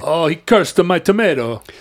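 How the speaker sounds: bad Italian accent impression. Joking about superstition on the subway: bad Italian accent impression. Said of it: "bad Ita-, uh, uh, uh, impressions of Italians".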